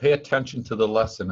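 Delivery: plain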